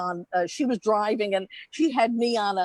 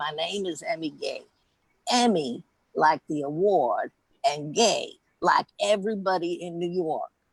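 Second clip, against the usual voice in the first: raspy, rough-edged voice; 5 semitones lower than usual. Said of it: "and she had this raspy voice".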